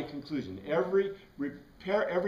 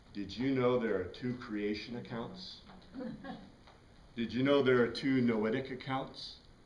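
low, secretive, conspiratorial half-whisper; 5 semitones lower, 4 dB quieter than usual. Mimicking how people tell you this, half-whispered. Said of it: "in a whispered voice".

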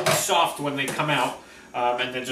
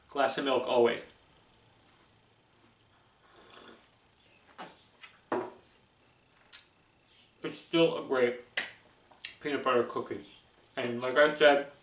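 speaking with mouth full, quieter; 4 dB quieter than usual. Reviewing peanut butter cookies for viewers while eating, talking with mouth full. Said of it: "sorry, I'm talking with my mouth full".

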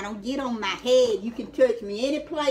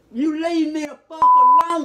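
loud, angry telling off. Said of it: "Why you so loud?".

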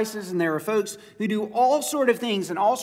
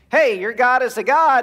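mock sarcastic taunt, higher and louder; 3 semitones higher, 5 dB louder than usual. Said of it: "Elijah was sarcastic".

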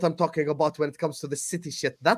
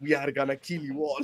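put-on Russian villain accent, quieter; 3 semitones lower, 6 dB quieter than usual. Showing the others what he just sounded like, Makarov impression. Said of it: "I sounded like a Call of Duty villain there".

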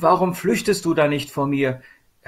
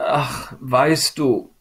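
unsure, faltering, hesitant, halting opening words. Asked what troubles her, she begins her answer hesitantly. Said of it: "begann sie zögernd".

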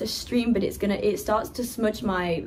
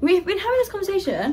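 very high, very fast, rattled-off blurt; 10 semitones higher, 3 dB louder than usual. Chatting with another speaker and blurting a thought out, very fast. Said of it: "Why did I say that so fast?".

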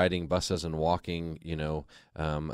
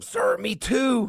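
very high, shrill, loud scream; 7 dB louder than usual. Retelling screaming right back at a man screaming in his face: retelling a scream. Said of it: "I just screamed right back at him".

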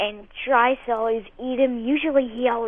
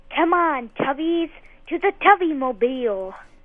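cartoonish kids'-show cartoon creature voice; 3 semitones higher than usual. Guessing how the Teletubbies would talk, doing a Teletubbies imitation. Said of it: "my imitation of them".

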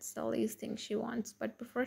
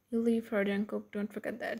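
ordinary delivery

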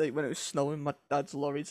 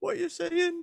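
put-on high, loud, confused yell in a child voice. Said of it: "and I'm like".

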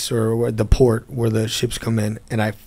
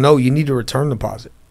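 usual speaking voice

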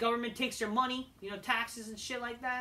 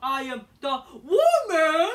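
booming, very slow, masculine, projected, drawn-out voice; 5 semitones higher, 12 dB louder than usual. Mocking a wrestler's promo, imitating Charlotte Flair projecting manly. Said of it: "and it sounds so manly".

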